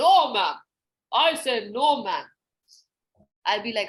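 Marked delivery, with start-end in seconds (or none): 0.0-2.2 put-on slow, stubborn kid voice. Showing a character who always says no to the teacher: put-on stubborn kid voice. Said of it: "In this different voice".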